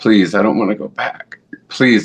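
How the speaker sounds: earnest, pleading, hard begging tone. Retelling own plea to god not to be sent back: imitating own begging. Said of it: "I'm begging".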